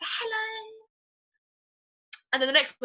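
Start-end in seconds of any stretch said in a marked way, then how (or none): 0.0-0.8 put-on delicate, dainty girlish voice, very high-pitched. Showing one of the roles from a multi-role show: dainty girl voice. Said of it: "dainty girl and I was like".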